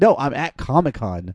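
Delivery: ordinary delivery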